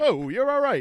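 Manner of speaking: very loud, very high, belted exclamation. Retelling Rodney Dangerfield thanking him for buying weed: Rodney Dangerfield impression. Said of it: "and he's like".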